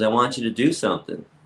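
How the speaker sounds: ordinary talk, nothing marked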